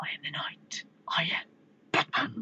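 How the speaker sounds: strained, near-whispered voice, disguising the real voice. Playing Batman answering who he is, strained Batman voice. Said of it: "Why do you sound like that?".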